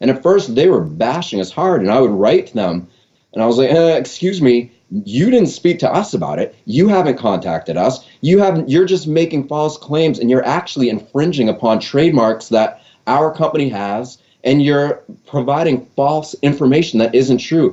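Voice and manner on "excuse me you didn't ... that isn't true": usual speaking voice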